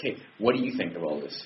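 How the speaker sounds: ordinary delivery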